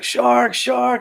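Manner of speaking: high, panicked screaming yell.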